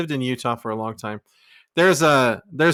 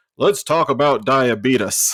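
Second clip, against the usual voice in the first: put-on old-man TV spokesman voice; 4 dB louder than usual. Describing an old man who would come on TV, doing a Wilford Brimley impression. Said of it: "he's the old man that would come on T V and be like".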